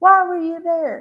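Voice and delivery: high-pitched, exasperated, put-upon, ugh-laden tone. Imitating a woman questioning someone, in a higher pitched voice. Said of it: "imagine her in a higher pitched voice".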